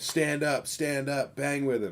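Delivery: high, urgent, fired-up screaming. Retelling screaming at the TV during a fight: imitating own screaming. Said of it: "I was screaming at my T V".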